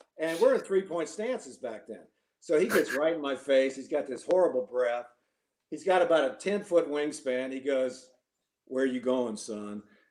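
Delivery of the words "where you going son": big, really deep bass voice. Recalling a football snap, quoting the opponent facing him, imitating Mister Blunt's deep bass. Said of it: "In this really deep bass voice".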